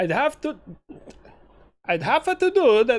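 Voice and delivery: clumsy put-on Italian accent. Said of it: "I sounded like Borat".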